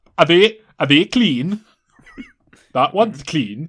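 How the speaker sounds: loud, failed attempt at a Welsh accent. Repeating a quoted question from a story someone is telling, in a bad welsh accent. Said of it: "I can't do Welsh".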